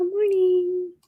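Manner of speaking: high, slow, drawn-out sing-song voice.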